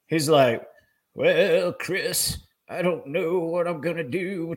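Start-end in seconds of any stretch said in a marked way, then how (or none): 1.1-4.5 put-on slow, aged, drawn-out old-sounding voice. Retelling a good friend's words after he retired: imitating someone sounding old. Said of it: "he started sounding old".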